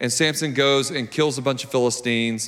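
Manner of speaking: ordinary delivery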